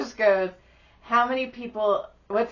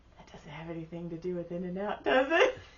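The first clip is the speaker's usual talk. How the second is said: put-on whisper, lower and quieter; 4 semitones lower, 8 dB quieter than usual. Retelling a question whispered into someone's ear: retelling a whisper. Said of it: "And I whisper in Josh's ears".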